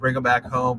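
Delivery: ordinary delivery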